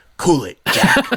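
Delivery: play-acted firm no-nonsense tone. Imitating the president scolding Netanyahu: Biden's sternest voice. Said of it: "in his sternest voice".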